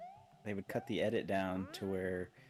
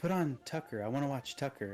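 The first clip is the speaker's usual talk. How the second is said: put-on angry old woman voice, higher pitch; 6 semitones higher than usual. Retelling a grandma's demand for a TV show: imitating an angry grandma. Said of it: "she was so mad".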